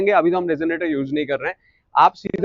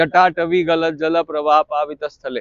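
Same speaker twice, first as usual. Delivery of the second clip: trailing off, energy dropping away at the end; 2 semitones lower than usual. Showing how not to finish the line: energy dropping at the end. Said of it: "जैसे कि हम खत्म कर देते हैं ... ऐसे energy down हो जाता है".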